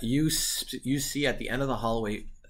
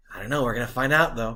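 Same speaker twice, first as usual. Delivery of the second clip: eager and excited, louder; 6 dB louder than usual. Answering a player's question about what is inside: excited. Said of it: "you sound really excited".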